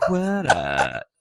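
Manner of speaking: acted octave shifts. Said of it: "just change octaves".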